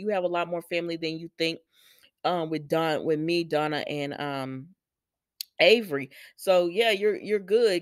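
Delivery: ordinary talk, nothing marked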